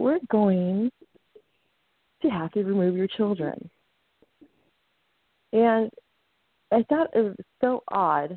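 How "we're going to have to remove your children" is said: sugary, gentle, kindest, sweetest tone. Retelling the emergency response worker's phone call, imitating a kind, sweet tone. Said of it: "in the kindest and sweetest tone of voice".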